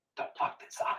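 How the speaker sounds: very soft, breathy whisper under the breath. Recalling what he said to the group, retelling a whisper. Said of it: "It was like a whisper".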